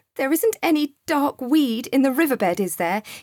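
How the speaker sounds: worried, uneasy tone. Narrator reading Joseph's question to Sam as he peers over the carpet's side, anxious. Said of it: "he asked in an anxious voice".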